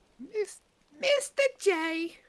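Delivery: put-on cartoon villainess voice. Trying out female impressions for the others: Harley Quinn voice. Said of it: "my Harley Quinn's better than my Joker".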